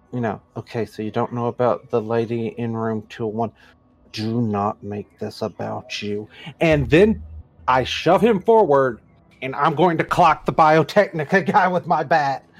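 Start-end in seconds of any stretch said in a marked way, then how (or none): 0.1-6.2 hushed, low, cautious half-whispering. A tabletop player's character half-whispers to the mob boss: half-whispering carefully. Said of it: "whisper to the mob boss very carefully".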